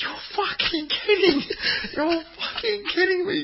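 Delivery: play-acted very high, shrill screaming rant. Retelling a manager screaming at the fourth official: imitating Neil Lennon screaming. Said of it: "Neil Lennon is screaming at the fourth official".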